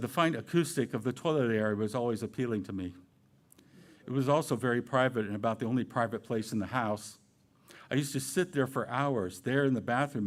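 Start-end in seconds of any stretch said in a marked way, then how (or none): none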